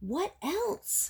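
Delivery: high, eager, impatient tone. Reading a story aloud, a fish presses a frog for more: impatient question. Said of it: "asked the fish impatiently".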